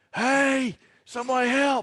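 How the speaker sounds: strained, very high cry. Recalling waking up unable to move, the speaker retells a yell for help. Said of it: "I was trying to yell".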